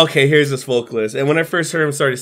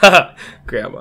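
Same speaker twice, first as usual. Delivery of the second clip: happy speech bubbling through giggles. Retelling what a smiling person said: imitating someone giggling. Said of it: "And he's giggling".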